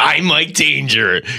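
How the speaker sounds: put-on radio DJ announcer voice. Announcing what is coming up next as Mike Danger, Mike Danger impression. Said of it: "I'm doing like my Mike Danger impression".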